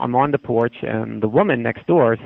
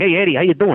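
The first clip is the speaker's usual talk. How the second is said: pitched-up neighborhood tough-guy voice; 5 semitones higher than usual. Describing an older neighbor next door: imitating a tough guy. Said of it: "a tough guy".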